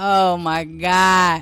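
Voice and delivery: play-acted sobbing with God drawn out. Retelling being made to eat something as a kid: imitating own crying. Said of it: "Crying, snot coming out of my nose".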